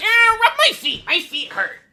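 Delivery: loud, high-pitched, shrill, entitled, demanding voice. Acting out an invented houseguest character who becomes the worst guy. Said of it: "becomes the worst guy ever".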